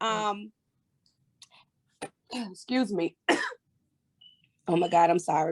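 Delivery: choked-up voice catching in the throat. The interviewer, welcoming a guest, breaks off mid-greeting to apologize; choked up. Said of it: "Got choked up a little bit".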